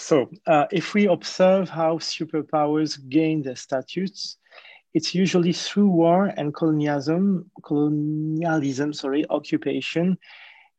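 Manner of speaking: English read aloud with a French accent.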